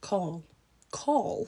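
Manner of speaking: British English accent. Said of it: "How do you say that in an English accent?".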